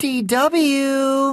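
very high, sugary, sweetest coaxing voice. Narrator reading Arthur addressing DW after counting his money: sweetest voice. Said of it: "he said in his sweetest voice".

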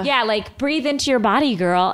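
ordinary delivery

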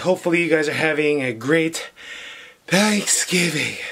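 breathless, winded voice, panting slightly. A vlogger greets his channel's viewers on thanksgiving, out of breath. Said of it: "I don't know why I'm out of breath".

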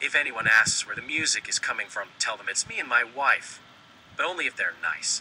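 ordinary delivery, nothing marked

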